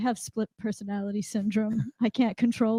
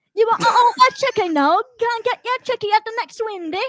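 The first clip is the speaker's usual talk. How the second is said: put-on loud, very high, botched cockney accent; 12 semitones higher, 6 dB louder than usual. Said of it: "the Doolittle version of English".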